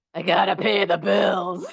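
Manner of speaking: put-on grumbling, complaining voice with New York accent. Speaker acting out their mom for the audience, imitating mom grumbling. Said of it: "I'm going to imitate my mom".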